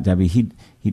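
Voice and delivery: ordinary talk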